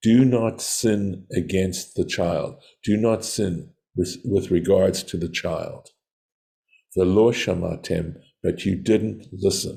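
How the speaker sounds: plain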